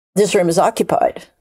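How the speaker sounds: normal talking voice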